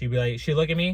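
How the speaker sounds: usual speaking voice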